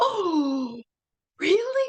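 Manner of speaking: acted, thrilled, very high, stretched, swooping "oh". Describing a photo of Obama's first day, imitating an excited Obama. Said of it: "He's so excited".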